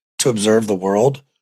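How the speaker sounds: ordinary delivery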